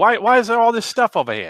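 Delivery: put-on botched Jersey accent sounding Australian. Doing a put-on Jersey accent that comes out sounding Australian. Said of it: "like a Jersey guy screwing up on an Australian guy".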